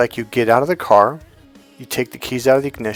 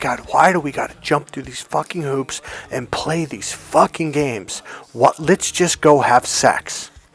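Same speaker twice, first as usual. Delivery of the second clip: acted-out angry frustration; 3 semitones higher than usual. Recalling his own past frustration with dating: imitating his own past anger. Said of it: "I used to get so pissed off".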